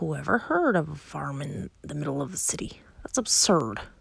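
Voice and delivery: low grumbling mutter under the breath. Narrator reads a man who has lost his tenants, muttering. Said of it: "he muttered".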